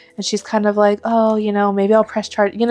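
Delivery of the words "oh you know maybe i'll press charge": put-on flirtatious, flirty tone. Retelling a book scene, quoting the heroine to the uncle: imitating a flirty character. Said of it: "she's just, like, flirty".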